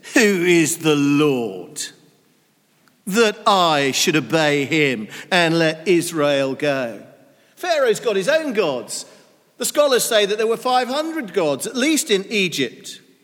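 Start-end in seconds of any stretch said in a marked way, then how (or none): 0.2-7.1 play-acted scornful sneer, low and very slow. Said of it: "you can hear the sneer in the tone of voice".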